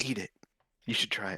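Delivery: half-whispered, very close to the ear. A player, in character, leans to another character's ear, half-whispering. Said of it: "I'm whispering in his ear".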